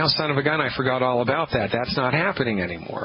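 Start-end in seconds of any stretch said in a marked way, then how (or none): none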